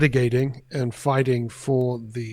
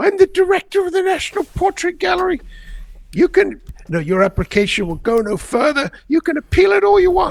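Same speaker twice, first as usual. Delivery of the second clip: very high, very loud, shrill put-on Australian accent; 8 dB louder than usual. Retelling how the gallery director ended an eleven-minute phone argument, imitating a high-pitched Australian accent. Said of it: "in a high pitched Australian accent saying".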